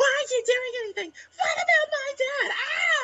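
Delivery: very high, complaining scream. Retelling how an annoying anime character acts: imitating Flay screaming. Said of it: "screaming at everybody".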